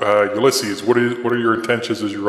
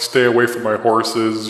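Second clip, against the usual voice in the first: ordinary talk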